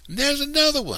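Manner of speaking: excited, very high-pitched scream. Little Man, running through the forest with the other children, screaming. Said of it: "Little Man screamed".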